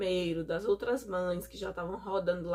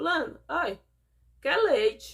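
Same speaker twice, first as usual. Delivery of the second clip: mock scornful, derisive, loud, high sneering; 7 semitones higher, 6 dB louder than usual. Retelling what a doctor said to another doctor: imitating a mocking tone. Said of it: "no maior deboche".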